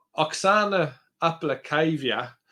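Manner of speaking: slow, drawn-out Australian accent. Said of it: "I said that in an Australian accent".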